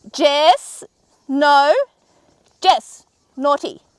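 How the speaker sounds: very loud, high-pitched yell. Speaker breaks off a tutorial on camera to stop her dog, yelling. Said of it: "I'm so sorry for yelling on camera".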